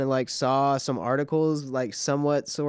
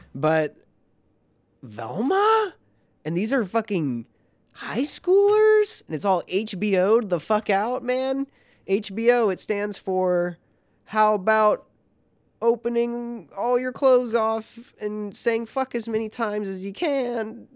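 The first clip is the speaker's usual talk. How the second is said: indignant, outraged rant; 8 semitones higher than usual. Complaining about a show to another speaker, sounding like a PTA dad. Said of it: "you sound like a fucking PTA dad".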